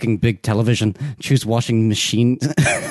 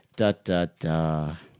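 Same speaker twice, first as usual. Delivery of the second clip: ordinary delivery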